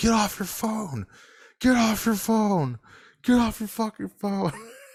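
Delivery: put-on very high, shrill, screaming ranting voice. Retelling a man at Santa Monica Pier yelling at everyone; imitating someone screaming. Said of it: "he was screaming at everyone like".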